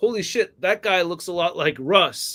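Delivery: plain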